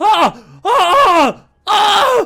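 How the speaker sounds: very high, loud scream at the top of the lungs.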